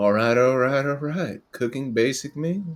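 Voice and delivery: put-on laid-back, relaxed Texan drawl. Reading a game rule as if voiced by Matthew McConaughey: Matthew McConaughey voice. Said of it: "Matthew McConaughey would be a good one".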